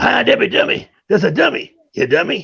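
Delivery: teasing, jabbing stand-up comic delivery. Showing the others a Redd Foxx impression: Redd Foxx impression. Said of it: "a mean, uh, Red Fox".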